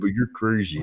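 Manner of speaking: sedated, tranquilized-sounding voice. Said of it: "he's like".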